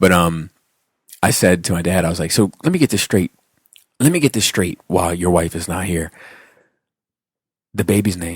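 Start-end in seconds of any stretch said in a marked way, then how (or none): 2.3-8.4 mock solemn, dead serious, no-nonsense tone. Retelling questioning a dad about the baby's name: imitating own serious tone. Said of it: "I'm talking very serious to him".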